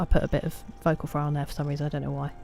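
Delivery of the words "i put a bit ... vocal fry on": plain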